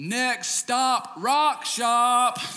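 very high, very slow, loud, drawn-out hollered announcement. Retelling what a companion called out in the parking lot: retelling a yell. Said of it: "You know why he yelled that out?".

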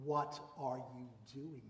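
furious, very angry scolding tone. Showing how they would question their rebellious kids, in an angry tone. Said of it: "I probably would have asked in a very angry tone".

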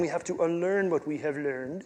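clumsy, really bad put-on voice, very hushed murmur. Explaining who counts as a saint, do the Yoda thing again, a bad Yoda impression. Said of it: "That was a really bad Yoda impression".

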